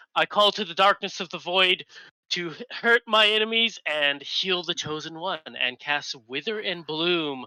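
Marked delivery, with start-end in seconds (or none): 0.1-5.3 high, yelled, in-character shout. Voicing a character casting a spell on enemies and allies: in-character yell. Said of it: "she's gonna follow up yelling".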